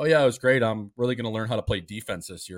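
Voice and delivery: put-on sarcastic tone. Retelling a player's interview answer about his new coach: retelling a sarcastic answer. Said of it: "you could sense the sarcasm".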